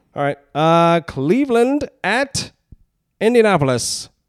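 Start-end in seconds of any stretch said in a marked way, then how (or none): 1.1-4.1 pitched-up 1950s horse racing announcer voice. Reading out the next game in their picks, 1950s horse racing announcer voice.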